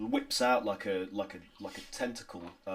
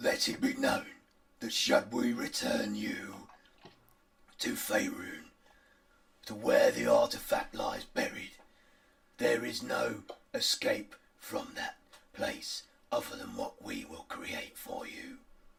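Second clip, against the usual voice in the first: creaky, gruff, rough voice. Voicing a character answering the party: gruff voice. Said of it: "the gruff voice says".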